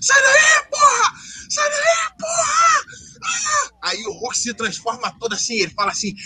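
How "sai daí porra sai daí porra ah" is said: very high, slow, drawn-out, frantic, desperate yell. Retelling a movie scene where a character flies overhead: imitating a desperate yell. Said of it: "ele tava desesperado".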